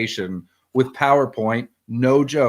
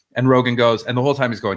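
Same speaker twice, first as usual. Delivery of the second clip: ordinary delivery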